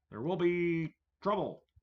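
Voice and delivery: loud, high-pitched, barked robot police voice. Troubleshooting a laptop stream, then doing a RoboCop impression. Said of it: "That's my RoboCop impression".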